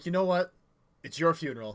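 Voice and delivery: clearly irritated, annoyed tone. Voicing a character who warns a player off a card game: visibly irritated. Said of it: "visibly irritated, would be like".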